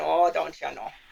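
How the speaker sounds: put-on Minnesota accent with O's stretched out. Joking after slipping into an accent: put-on minnesota accent. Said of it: "I got my O's long again".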